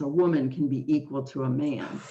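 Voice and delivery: ordinary delivery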